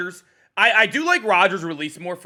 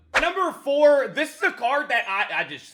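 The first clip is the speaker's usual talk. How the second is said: high voice breaking on the words; 9 semitones higher than usual. Ranking quarterback cards for viewers, voice cracking mid-sentence. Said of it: "I just voice cracked crazy".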